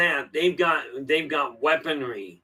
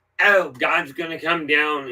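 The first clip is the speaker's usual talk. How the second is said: sarcastic, mocking put-on voice. Quoting religious people mockingly: sarcastic imitation of religious people. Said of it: "I'm sounding really sarcastic about this".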